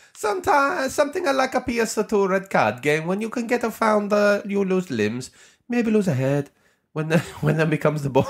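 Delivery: high, wide-ranging, big mock Italian accent.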